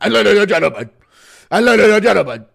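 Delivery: belted out high and loud. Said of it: "impression of K S I".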